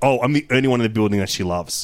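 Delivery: ordinary delivery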